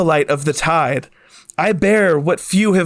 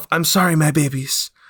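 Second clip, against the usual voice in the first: whispered aside, lower pitch; 3 semitones lower than usual. A character crouches by the goo and whispers to himself. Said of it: "whispers to himself".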